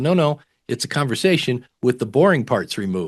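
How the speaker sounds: ordinary talk, nothing marked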